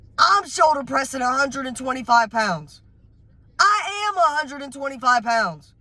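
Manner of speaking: worked-up, insistent, emphatic, pitched high, fired up. A speaker tells his audience about a friend he trains with, yelling. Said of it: "I'm sorry for yelling at y'all".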